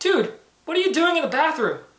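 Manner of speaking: high, surprised calling out.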